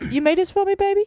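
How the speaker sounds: very high, doting, loving, sweet-talking voice. Retelling a clip where he asks his partner about a dish: imitating a man talking lovingly. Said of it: "doing the voice".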